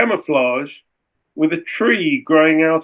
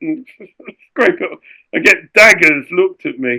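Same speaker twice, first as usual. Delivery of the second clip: ordinary delivery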